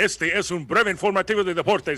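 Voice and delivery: high, loud Spanish news announcer voice.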